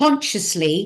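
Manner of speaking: "consciously" stressed, weight deliberately laid on it. Explaining how to walk through a portal: stress on consciously. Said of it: "Emphasis on the word consciously".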